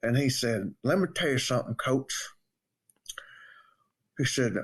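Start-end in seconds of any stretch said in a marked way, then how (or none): 0.8-2.3 put-on Southern Alabama accent. Retelling how a coworker greeted him: imitating an Alabama coworker's voice. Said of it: "when we used that voice".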